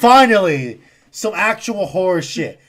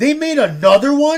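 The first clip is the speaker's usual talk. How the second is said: loud, high, play-acted, stunned, shocked outburst; 8 semitones higher than usual. Retelling a reaction on hearing about a sequel: retelling a shocked loud shout. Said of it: "I said it so loud".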